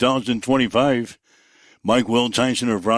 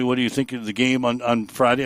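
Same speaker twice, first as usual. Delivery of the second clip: ordinary talk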